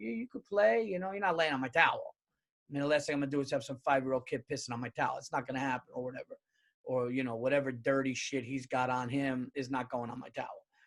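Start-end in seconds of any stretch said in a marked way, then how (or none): 0.0-2.1 half-laughing, pitched-up, gentle nice-guy tone. Retelling what was said to a kid on the beach: retelling own words while laughing. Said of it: "kinda laughing, kinda saying".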